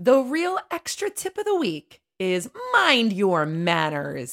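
put-on storybook witch voice. A presenter announces the extra tip of the week: witch voice. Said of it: "Why did you say it like a witch?".

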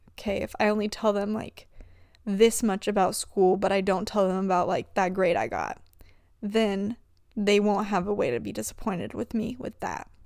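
ordinary delivery

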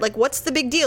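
normal talking voice

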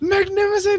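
very high, grand, theatrical yell. Imitating the Collector yelling in Infinity War: imitating the Collector yelling. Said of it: "when he's yelling".

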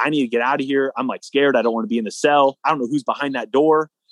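ordinary delivery

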